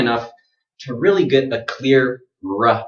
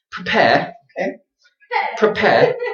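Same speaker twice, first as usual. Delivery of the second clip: teasing put-on British accent, very high pitch; 9 semitones higher than usual. The speaker jokingly shows off a mock British accent. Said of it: "This is my British accent".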